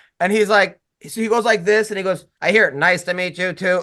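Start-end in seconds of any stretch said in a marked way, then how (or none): 2.4-3.8 put-on robotic text-to-speech phone voice. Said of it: "so the phone even has a robot?".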